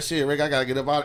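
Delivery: ordinary delivery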